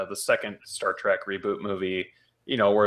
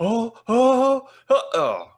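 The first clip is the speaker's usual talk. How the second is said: high mock moan. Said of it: "and it was just like".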